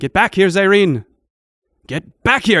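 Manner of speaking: menacing high wizard voice. A game master voices a wizard calling after the players: threatening wizard voice. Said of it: "it's starting to sound more threatening".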